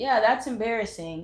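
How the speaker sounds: plain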